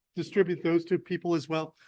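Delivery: ordinary talk, nothing marked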